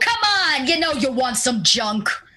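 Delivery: high, brash, boisterous street-hawker voice. Voicing a short trader calling to passersby: boisterous trader voice. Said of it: "clearly makes up for his height in his boisterous voice".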